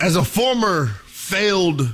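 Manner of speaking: strong stress on the word failed. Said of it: "emphasis on failed".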